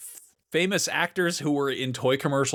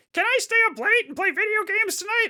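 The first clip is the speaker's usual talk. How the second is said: put-on dweeby little kid voice, very high; 3 dB louder than usual. Describing an actor's old commercial, quoting his little-brother role: dweeby little brother voice. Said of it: "he's basically like dweeby little brother".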